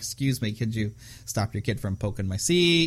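ordinary talk

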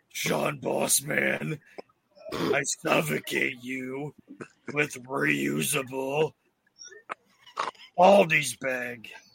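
furry, puppet-style monster voice. On a show episode, a speaker keeps a running bit going in Cookie Monster voice. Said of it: "Why is he Cookie Monster all of a sudden?".

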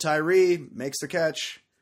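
flat monotone announcer voice. Speaker recalling a football broadcast call, doing Joe Buck flat monotone. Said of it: "His same monotone that he keeps for the entire game".

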